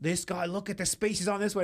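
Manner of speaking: fake Australian accent, showman style. Retelling how a man showed off a homeless man's teeth, in a fake Australian accent. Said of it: "he put on the Australian accent".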